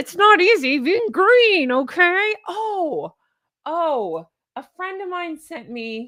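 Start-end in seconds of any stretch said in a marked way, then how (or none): 0.0-2.3 loud, full-on frog puppet voice. Talking to viewers, the speaker declares being full Kermit and does a Kermit the Frog voice. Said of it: "I am full Kermit".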